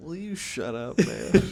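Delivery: very high, slow, drawn-out voice. Joking about how a politician would react: Joe Biden voice. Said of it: "He's gotta be Joe Biden about it".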